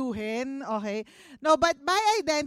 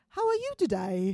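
put-on British accent, lower; 3 semitones lower than usual. Retelling how a son greeted his mother: imitating a son's British accent. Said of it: "Ganyan siya".

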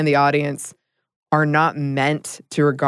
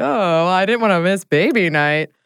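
casual, light, jokey offhand tone; 4 semitones higher than usual. Retelling what the husband said: imitating a jokey tone. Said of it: "in a jokey, jokey way".

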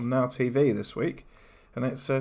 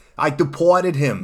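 loud, heavily laid-on, put-on Boston accent; 8 dB louder than usual. Using a word in a sentence during a word game, in a boston accent. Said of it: "I'll say it in my Boston accent".

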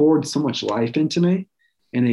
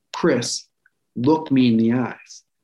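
mock-mean tone, slower. Retelling a nurse kneeling at the speaker's bedside: imitating a mean tone. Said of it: "she was kind of mean about it".

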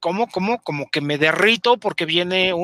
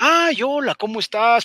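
odd, weird-sounding, pitched-up voice; 6 semitones higher than usual. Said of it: "pero con una voz así".

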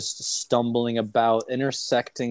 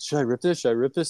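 mock-joking, put-on playful tone, higher pitch; 3 semitones higher than usual. Retelling what someone jokingly asked, retelling a joking question. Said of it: "Michael goes like jokingly".

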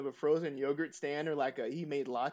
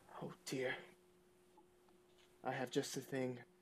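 clear put-on voice, much quieter; 2 semitones lower, 12 dB quieter than usual. Narrator voicing Delwyn, who otherwise mumbles, speaking this very clearly. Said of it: "he says very clearly".

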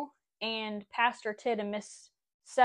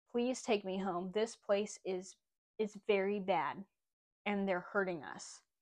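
low, soft, hushed half-whisper; 2 semitones lower, 8 dB quieter than usual. Retelling a plea to a woman after the service: imitating a half-whisper. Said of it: "I whispered in her ear".

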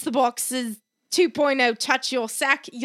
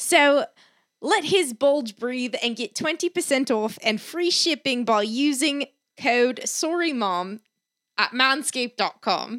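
rough put-on Australian accent, slowed down. Podcast host reads the Manscaped sponsor ad in a put-on Australian accent. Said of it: "I was been practicing my Australian".

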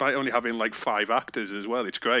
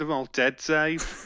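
put-on Northern accent, pitched up; 5 semitones higher than usual. On a podcast, a co-host blurts a quoted line in Holly's accent. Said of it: "What accent was that?".

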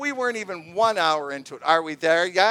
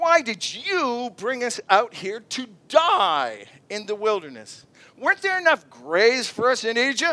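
acted heavy sarcasm, swooping, "die" stretched out; 2 semitones higher than usual. Reading the people's complaint to Moses aloud: imitating a sarcastic complaint.

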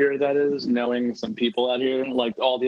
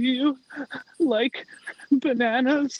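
mock very high, tearful girl's whimpering, sobbing voice; 13 semitones higher than usual. Retelling how a sobbing thirteen-year-old girl asked a question; imitating a sobbing girl. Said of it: "like sobbing".

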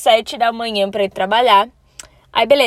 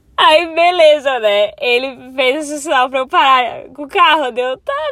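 talking while laughing from embarrassment; 2 semitones higher than usual. Telling a story she is ashamed to tell, laughing from embarrassment. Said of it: "eu tô rindo de vergonha, sério".

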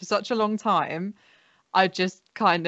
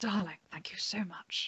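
very soft, lovely, murmured voice; 15 dB quieter than usual. Answering praise for the sketches in a Joanna Lumley voice. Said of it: "one of your Joanna Lumley sketches".

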